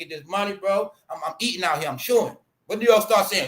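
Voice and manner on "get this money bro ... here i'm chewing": put-on old-style street-talk slang voice. Showing how he talked in the streets back when he had pride: imitating his old street self. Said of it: "let me show you me".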